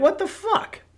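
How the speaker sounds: very high, incredulous tone. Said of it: "And I look at him like".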